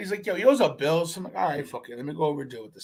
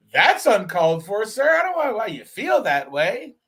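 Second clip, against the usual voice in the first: loud, put-on, fake-polite customer-service voice; 4 semitones higher, 6 dB louder than usual. Retelling an argument with a customer over a bill, in put-on customer-service politeness. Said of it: "I put on the customer service shit eating grin".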